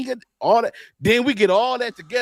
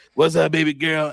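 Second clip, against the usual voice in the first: put-on seventies old-school dude voice, lower; 4 semitones lower than usual. Imitating an og from the seventies greeting a woman: imitating an og from the seventies. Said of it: "with that voice".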